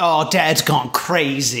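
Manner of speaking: ordinary talk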